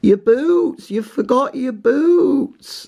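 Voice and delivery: very high, drawn-out shrieking scream. Retelling Fern screaming at people setting off hiking, retelling a scream. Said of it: "Fern just started screaming at them".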